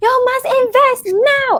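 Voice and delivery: very high, hyped, pumped-up hard-sell ad voice. Retelling a stock-investing ad seen on Facebook: imitating a pumped-up ad guy. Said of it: "this guy very pumped".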